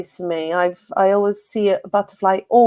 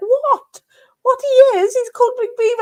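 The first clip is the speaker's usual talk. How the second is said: put-on loud, very high, really strong Welsh accent. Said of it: "she's got a really Welsh accent".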